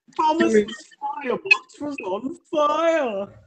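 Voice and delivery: piercing high scream, "fire" stretched long. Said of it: "Michelangelo screaming".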